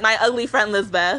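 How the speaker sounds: ordinary talk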